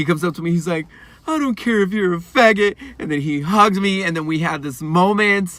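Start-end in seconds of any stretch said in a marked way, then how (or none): 1.3-2.8 put-on tearful crying voice, higher and louder. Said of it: "he was in tears, like, crying".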